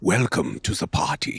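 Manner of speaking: half-whispered, hushed, campy German accent. Recalling a voice role, the speaker repeats a line in a campy german voice. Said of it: "Just this campy German voice".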